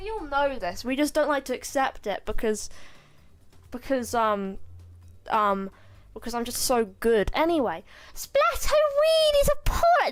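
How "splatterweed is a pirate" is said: very high, shrill, loud cartoon voice. Doing a character's line, then calling it the worst ever: Shiver voice. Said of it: "That's the worst Shiver voice that's ever existed".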